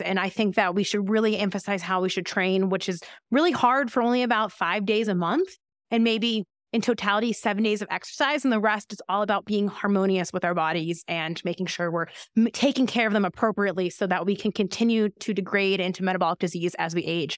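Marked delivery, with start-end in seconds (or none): none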